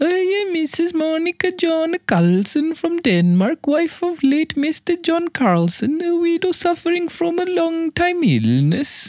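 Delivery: high-pitched, put-on Scandinavian accent. Reading the rest of a letter aloud to listeners, in a Scandinavian accent. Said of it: "I'm going to read the rest in that accent".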